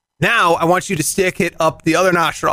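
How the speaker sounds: ordinary delivery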